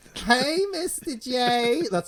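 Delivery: clumsy, bad, very high, squeaky put-on voice. Greeting the Joker after another speaker: worst Harley Quinn impression. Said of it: "That's the worst Harley Quinn impression".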